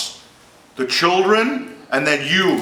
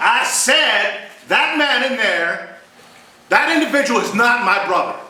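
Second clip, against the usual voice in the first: mock defiant, talking-back tone, pitched up; 7 semitones higher than usual. Showing an actor how to say the line, arguing with mom: defiant toward mom. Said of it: "Defy your mom".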